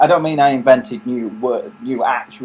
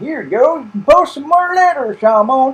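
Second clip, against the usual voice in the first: very high, put-on Mexican farmer voice. Complaining that he keeps offering the same letter-posting task, in a put-on Mexican farmer accent. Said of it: "Why did I just put on the accent of um, like some Mexican farmer?".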